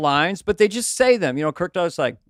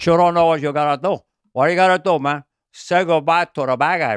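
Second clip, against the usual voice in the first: put-on Cuban accent. Quoting a favorite performance, Al Pacino in Scarface with Cuban accent. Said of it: "his Cuban accent in Scarface".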